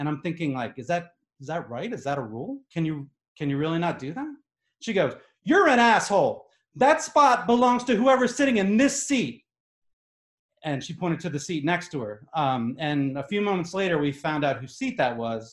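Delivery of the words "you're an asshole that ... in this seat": high, furious, angry put-on screaming. Retelling how a woman screamed at the speaker over a bag, retelling an angry scream. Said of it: "she starts screaming at me".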